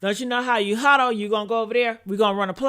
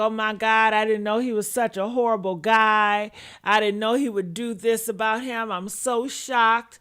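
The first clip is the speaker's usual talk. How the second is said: usual speaking voice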